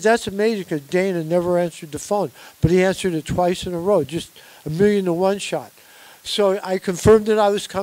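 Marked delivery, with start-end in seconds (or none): none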